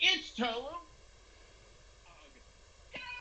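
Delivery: very high witch announcer voice, calling out. Voicing an announcer starting a cooking contest: witch announcer voice. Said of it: "the witch announcer goes".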